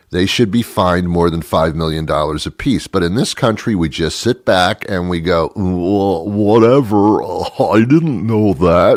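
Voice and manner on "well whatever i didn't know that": dim, clueless, very slow dopey drawl. Mocking how the public shrugs things off, in an impression of a stupid person. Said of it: "That's my impression of a stupid person".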